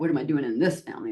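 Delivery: quick, offhand flippant tone.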